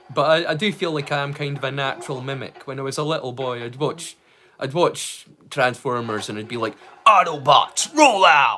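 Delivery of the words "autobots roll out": booming, bellowed robot leader battle cry. Retelling watching Transformers as a boy: Optimus Prime voice as Peter Cullen's brother. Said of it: "my best impression of Peter Cullen's brother".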